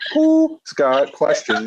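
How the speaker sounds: very high, owl-like hooting voice. Acting out how another person will sound in a planned bit: owl voice. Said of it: "I'm going to just sound like an owl".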